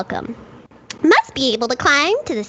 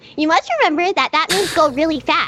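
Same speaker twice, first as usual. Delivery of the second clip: usual speaking voice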